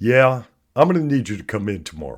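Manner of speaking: mock easygoing, totally relaxed voice. Describing a boss walking up to an employee, imitating a relaxed boss. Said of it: "in the most relaxed voice imaginable".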